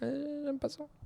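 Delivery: sheepish high put-on voice.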